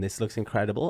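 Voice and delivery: ordinary delivery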